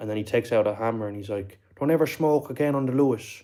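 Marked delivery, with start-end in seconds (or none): 1.8-3.4 put-on accent from Limerick. Retelling a man threatening a crack smoker, in a Limerick accent. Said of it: "he sounded like he was from Limerick".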